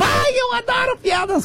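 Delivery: put-on pleading, begging child voice.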